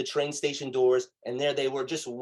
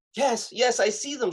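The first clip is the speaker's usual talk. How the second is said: put-on woman's voice, much higher pitch; 9 semitones higher than usual. Retelling a phone call, the speaker quotes the woman's answer: retelling a woman's reply. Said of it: "she says".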